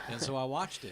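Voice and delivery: ordinary talk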